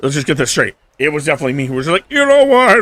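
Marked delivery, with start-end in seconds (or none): 2.1-2.8 horse-like voice, higher and louder. Retelling own past words, which came out sounding like a horse. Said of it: "I don't know why I turned into a horse".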